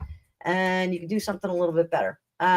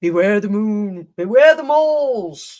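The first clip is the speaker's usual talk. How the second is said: bad put-on English accent, louder; 6 dB louder than usual.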